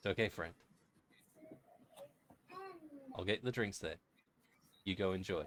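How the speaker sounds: soft, close-in half-whisper, as if near the ear. Voicing a character leaning close to a player's ear: half-whispering in character. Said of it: "leans down close to your ear and whispers".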